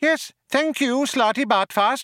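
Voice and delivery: sharp, very high-pitched voice. Benji Mouse cuts off Slati Bartfast after he excuses himself: spoken sharply. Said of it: "said Benji Mouse sharply".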